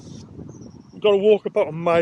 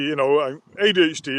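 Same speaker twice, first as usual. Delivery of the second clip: normal talking voice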